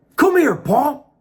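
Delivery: high, loud, far-carrying call.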